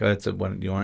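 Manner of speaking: soft, hushed, voiceless half-whisper. Retelling a proxy bidder on the phone: imitating someone half-whispering. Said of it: "whispering to him".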